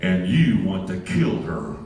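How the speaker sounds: deep, low, grand, booming heavenly proclamation voice. Speaker retells what God said to Dad in his spirit: booming voice of God. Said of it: "with his booming voice in his inner spirit".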